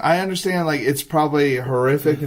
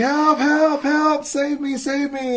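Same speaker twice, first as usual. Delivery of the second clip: play-acted, very high, drawn-out screaming; 12 semitones higher than usual. Retelling a horror movie scene where a character is pulled into bed: imitating someone screaming for help. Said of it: "he's screaming".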